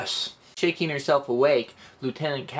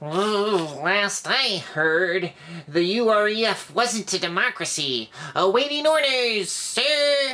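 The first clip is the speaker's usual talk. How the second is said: high insect-man voice, "last" drawn out; 7 semitones higher than usual. Narrator voicing Junior Lieutenant Merker's reply, Merker's insect-man voice. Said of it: "I was talking like that for Junior Lieutenant Merker because he's an insect man".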